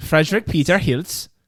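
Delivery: put-on, mock German accent and pronunciation. Saying an ancestor's name, the speaker uses a German accent. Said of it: "I'm saying it in a German accent".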